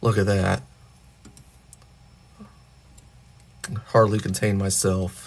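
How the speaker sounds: monotone, flat delivery. Assembling a figure and joking about the excitement: monotone voice. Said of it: "the thrill in my monotone voice".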